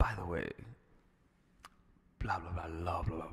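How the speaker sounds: low, sultry, sensual whisper, close and intimate. Demonstrating how to lean close and speak in someone's ear, sensual whisper. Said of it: "you talk in a very sensual voice".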